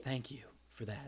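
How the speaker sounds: creepy, very quiet, barely audible hushed voice. Voicing a character after a creepy lip lick: creepy. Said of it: "a creepy, like, lip licking".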